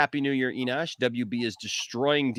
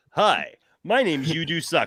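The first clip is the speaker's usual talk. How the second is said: mock commercial announcer voice, higher and louder; 4 semitones higher, 4 dB louder than usual. Imagining a TV commercial for a made-up service: mock TV commercial voice. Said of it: "I just imagine that commercial".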